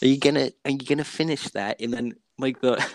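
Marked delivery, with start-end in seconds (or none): 0.0-1.8 put-on gremlin voice. Acting out an imagined creature that pops up: crumb gremlin voice. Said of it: "the crumb gremlin appears and it goes".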